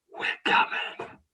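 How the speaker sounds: soft, breathy whisper. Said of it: "whispers in it".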